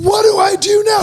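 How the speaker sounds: very high, shrill, shouted scream. Retelling how his wife, stuck paddling, screamed at him: imitating her screaming. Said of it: "she just screams at me".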